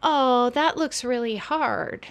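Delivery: slow, drawn-out, pitying, sympathetic tone.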